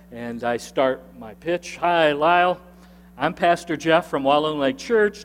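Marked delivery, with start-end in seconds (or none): none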